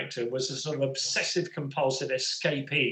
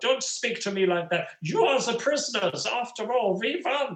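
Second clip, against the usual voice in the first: fake, hammy cod German accent, pitched up; 8 semitones higher than usual. Recalling a play, the speaker quotes the lead actor's lines in a cod German accent. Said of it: "in a sort of cod German accent again".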